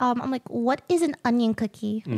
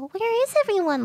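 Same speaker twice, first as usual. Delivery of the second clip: put-on much higher, scared, frightened little girl voice; 8 semitones higher than usual. Voice actor demonstrating her game character, in a scared little girl voice. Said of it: "scared little girl sort of voice".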